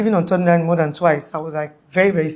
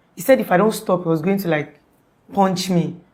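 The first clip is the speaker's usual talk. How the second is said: plain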